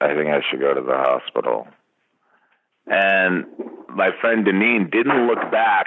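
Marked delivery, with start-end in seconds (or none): 0.0-1.7 mumbled, lower-pitched voice. Recalling riding in the back seat while friends drove, quoting own words, retelling a mumble. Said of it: "I just mumbled something like".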